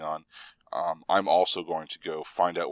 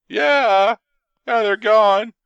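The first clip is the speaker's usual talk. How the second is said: scared guard voice, shrill, very high and loud; 12 dB louder than usual. In a game, Rook answers at the door whether they are gone: scared guardsman voice. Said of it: "puts on his best scared guardsman voice".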